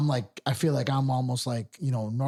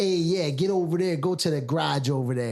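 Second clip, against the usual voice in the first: thick, deep South Side Chicago accent; 3 semitones higher than usual. Showing how accents differ by region, heavy Chicago South Side accent. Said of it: "someone that's like a deep deep South Sider, you're gonna hear like".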